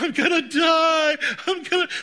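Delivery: desperate strained wail, high, loud and slow.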